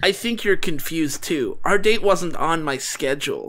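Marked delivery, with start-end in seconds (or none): none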